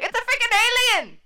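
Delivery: frantic, very high, loud freak-out. Retelling a movie scene, imitating Tito flipping out. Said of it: "flipped out about it".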